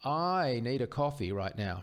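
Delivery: I lifted and slowed. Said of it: "emphasizing different parts of the sentence".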